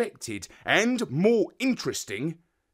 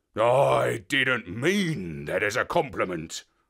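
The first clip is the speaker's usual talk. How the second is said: low, growled, grumbling tone; 4 semitones lower than usual. Narrating a story, a dog answers a remark about the parrot, growling. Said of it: "he growled".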